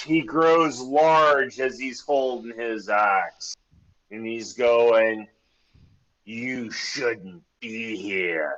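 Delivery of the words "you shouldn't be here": grumpy, irritable-sounding voice. Game master voicing a man growing huge while holding his axe, grumpy voice. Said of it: "He's grumpy".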